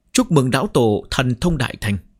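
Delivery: ordinary delivery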